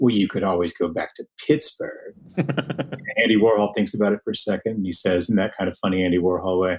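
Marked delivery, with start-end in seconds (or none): 0.0-2.1 snide, sneering delivery. Retelling a film scene as the lead's artist friend, mock sneering. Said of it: "says to him in this really sneering way".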